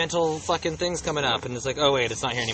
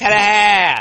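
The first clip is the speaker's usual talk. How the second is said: put-on New Jersey accent, higher and louder; 8 semitones higher, 12 dB louder than usual. Saying a food word the other way suggested: new jersey accent. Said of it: "in a New Jersey accent".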